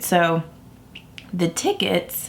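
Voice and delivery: voice cracking with a break mid-word. Speaker telling a story about going to IMATS, voice cracking. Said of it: "sorry, my voice just cracked".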